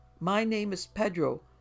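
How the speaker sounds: high, shrill, drawn-out, beseeching pleading whine. A frightened man insisting on his name to another man, in a shrill, pleading whine. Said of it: "Gluckman whined in a shrill, pleading voice".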